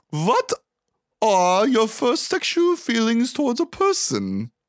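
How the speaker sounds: weird put-on German accent, slow and swooping. Retelling a character's first rapid-fire question on a bus: weird german accent. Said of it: "in a weird German accent".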